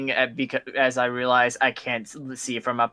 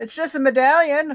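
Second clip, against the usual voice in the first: shouting down, higher; 13 semitones higher, 3 dB louder than usual. Voicing a character calling down about a medallion: yelling down. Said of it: "yelling down".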